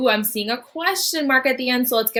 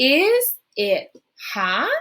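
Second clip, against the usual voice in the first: question-like tune, pitch lifting on hot. Leading a reading drill, modeling the question voice. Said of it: "Good question voice".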